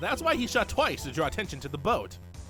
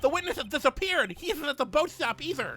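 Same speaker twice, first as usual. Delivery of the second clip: lisping voice, much higher and louder; 10 semitones higher, 4 dB louder than usual. Voicing the guard in a courtroom trial scene, guard voice with a lisp. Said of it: "I'm giving this guard a lisp".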